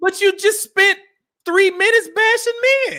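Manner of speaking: voice going up high. Pushing back on another speaker's claim, voice getting high-pitched. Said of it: "My voice getting high pitched".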